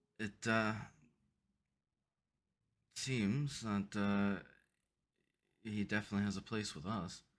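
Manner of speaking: hushed half-whisper under the breath. Replying in character to a half-whispered remark about the new guy: half-whispering back. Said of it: "I'll whisper back".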